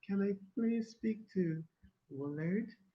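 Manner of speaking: very high, soft, put-on woman's voice. Retelling a phone call, the speaker imitates the woman caller's voice. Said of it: "I trying to simulate a female's voice".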